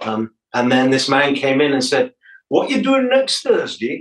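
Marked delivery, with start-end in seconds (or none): 2.5-4.0 put-on Geordie accent pitched way up, very high. Retelling what a man said after a pub gig, in a geordie accent. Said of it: "That's my Geordie accent".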